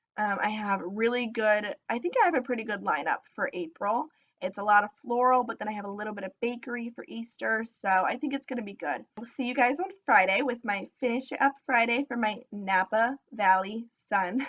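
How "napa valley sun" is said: slow, deliberate, careful, every word distinct. Naming the next Finish It Up Friday item: saying the name slowly. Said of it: "I'm trying to say it slowly".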